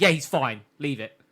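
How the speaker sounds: mock pissed-off, very annoyed, dismissive tone. Retelling an angry character's curt reply in an anime plot. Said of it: "Cerseus is very pissed".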